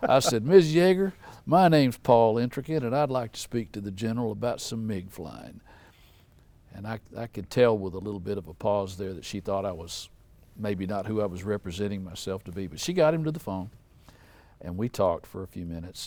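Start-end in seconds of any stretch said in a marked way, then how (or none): 0.4-5.6 loud, folksy put-on Southern good old boy accent. Phoning a general's wife, the speaker introduces himself: southern good old boy voice. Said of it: "in my best Southern good old boy voice".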